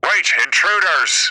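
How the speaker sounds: high, magically intoned voice. Describing a game scene where the captain of the guard calls out, magically intoned voice. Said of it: "magically intoned voice".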